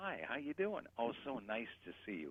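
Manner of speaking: gentle projected voice. A speaker shows how to talk when out with ladies: soft projection. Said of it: "You have to talk like this".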